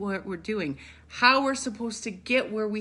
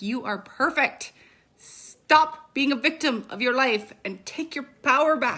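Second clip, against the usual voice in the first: stern, motherly, scolding mom voice; 3 semitones higher, 4 dB louder than usual. Speaker addressing listeners, pulling out a mom voice. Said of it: "I'll pull my mom voice out".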